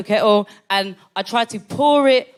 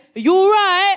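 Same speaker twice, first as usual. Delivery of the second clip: put-on British accent; 10 semitones higher, 3 dB louder than usual. Retelling what a man sitting up on the sofa said: british accent. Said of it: "in a British accent".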